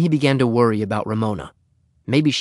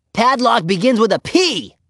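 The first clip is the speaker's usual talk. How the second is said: crowing, very high-pitched, triumphant voice; 11 semitones higher, 3 dB louder than usual. Ramona answers Henry, triumphant. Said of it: "she said triumphantly".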